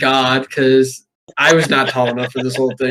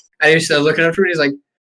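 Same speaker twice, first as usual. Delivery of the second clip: usual speaking voice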